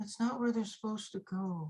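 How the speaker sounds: high, eerie, ghostly disembodied voice. Voicing an unseen ghost who objects to where the bowls went: ghostly voice. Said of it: "argue with the ghostly voice".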